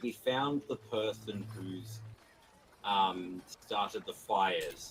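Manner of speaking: very quiet, slow, leaned-in, secretive half-whisper. Leaning over to tell a character who started the fires: half-whisper. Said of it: "lean over and whisper to him and say".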